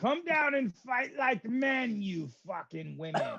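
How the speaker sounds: high, drawn-out, goading battle-cry yell. Taunting enemies in a fight in character: yelling in character. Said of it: "I'm yelling at him some more".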